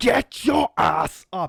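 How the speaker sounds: very slow, gruff, rough barking voice. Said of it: "he stomps over ... And he says".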